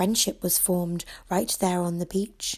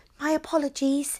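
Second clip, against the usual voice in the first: bright, easy, light and high-pitched; 7 semitones higher than usual. A narrator reads a little girl answering a turtle, softly with a grin. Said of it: "she said softly with a grin".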